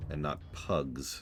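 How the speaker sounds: slow, low voice full of disdain.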